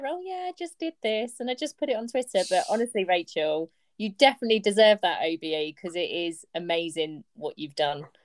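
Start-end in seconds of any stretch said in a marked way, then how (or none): 0.1-2.4 casual, breezy, offhand throwaway tone, pitched up. Teasing the guest about how she described her COVID role: mock-offhand, laissez-faire tone. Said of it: "you say it so laissez-faire".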